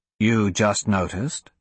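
ordinary delivery

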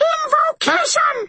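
very high, clear piping voice. Reading a fight scene, the armored figure calls out to Toot: high, clear piping voice. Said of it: "he piped in a high, clear voice".

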